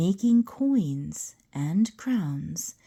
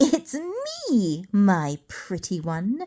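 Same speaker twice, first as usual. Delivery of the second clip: slow, swooping, sly, taunting cackle. A narrator reads the little man's words to Isabel, cackling. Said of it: "The little man appeared again. / he saw the flash of a golden cape. / he cackled. / he shrieked. / sneered the little man".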